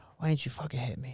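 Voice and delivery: soft, indistinct, mumbled words. Retelling a reply to a driver after nearly being hit: imitating own mumbling.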